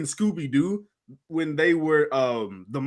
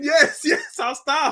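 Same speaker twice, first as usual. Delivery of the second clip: mock scream, pitched way up and stretched; 10 semitones higher than usual. Retelling how a frightened person promised to stop: imitating someone screaming. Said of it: "He's just screaming".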